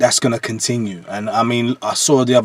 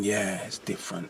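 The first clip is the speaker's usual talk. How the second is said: very soft, quiet inner voice. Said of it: "I'm thinking".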